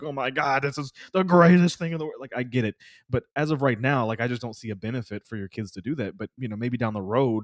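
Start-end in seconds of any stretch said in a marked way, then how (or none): 0.0-2.2 loud, mock screaming outburst. Imagining a parent out there screaming at them: imitating a screaming parent. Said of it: "some parent out there screaming at us like".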